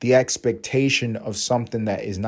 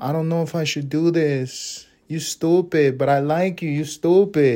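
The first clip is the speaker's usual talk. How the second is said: put-on Latin American accented voice, slower; 5 semitones higher than usual.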